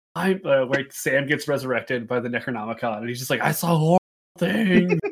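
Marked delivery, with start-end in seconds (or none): 3.4-5.0 screaming, raised voice. Retelling a comedy sketch scene, imitating Sam screaming. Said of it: "He's just screaming over and over again".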